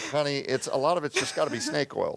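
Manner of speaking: very sarcastic, dry, jabbing remark. Retelling past replies to a wife about natural therapies: imitating own past sarcastic tone. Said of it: "I said very sarcastic things like".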